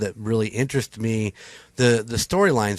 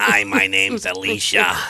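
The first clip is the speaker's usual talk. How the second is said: put-on gravelly voice, lower; 3 semitones lower than usual. Speaker introduces herself after comparing her voice to cartoon sisters, gravelly Patty and Selma voice. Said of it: "that gravelly voice".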